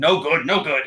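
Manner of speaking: loud, revolted, disgusted kobold voice. Voicing a kobold who shakes his head: disgusted kobold voice. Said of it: "shakes his head and sticks his tongue out in, in disgust".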